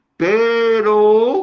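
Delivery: stretched, very high shouted cry on pero. Reading a capitalized word in a Bible verse aloud: shouted warning on "pero". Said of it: "así con esa, esa misma este, entonación y advertencia".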